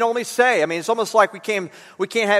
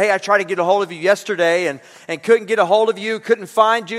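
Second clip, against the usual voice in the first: ordinary talk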